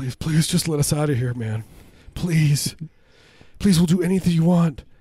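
acted, overdone pleading.

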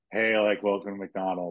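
put-on bored fast-food worker voice. Acting out a McDonald's commercial line as Fessy: imitating Fessy sounding bored. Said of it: "all, like, bored and shit".

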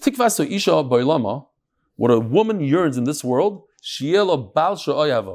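ordinary delivery

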